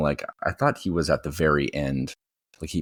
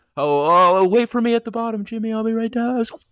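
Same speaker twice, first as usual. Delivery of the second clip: shrill, very loud, high fake shouting; 6 dB louder than usual. Pretending to go down a water slide, calling below: very loud pretend shouting. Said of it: "Very loud".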